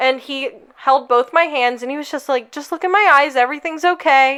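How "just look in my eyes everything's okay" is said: mock kind, reassuring tone, higher. Retelling how a man held her hands while she cried, retelling a kind man's words. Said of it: "such a kind and genuine person".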